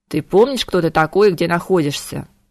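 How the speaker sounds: ordinary delivery, nothing marked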